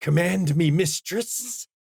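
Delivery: small, eerie, creepy shadow-creature voice. Voicing the Abyss Mystic's shadow ally as it comes up: little creepy voice. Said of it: "everybody in the room can hear its little creepy voice".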